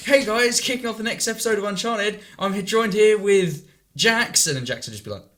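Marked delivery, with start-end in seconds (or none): 0.0-4.5 gushing, very high, loud and enthusiastic. Retelling how an old channel's episodes began: imitating an enthusiastic intro. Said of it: "one person would be really enthusiastic".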